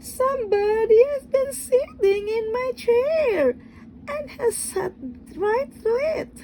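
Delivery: very high, tiny, little wee crying voice. Narrator voicing the little wee bear in the three bears story, little wee voice. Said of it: "cried the little wee bear in his little wee voice".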